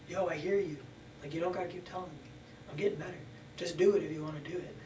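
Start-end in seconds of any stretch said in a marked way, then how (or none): none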